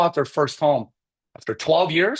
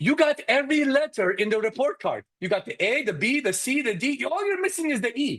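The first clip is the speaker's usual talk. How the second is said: put-on Persian accent with a teasing tone; 9 semitones higher, 4 dB quieter than usual. Retelling what his mom said to him, Persian accent imitating mom. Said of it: "use a Persian accent".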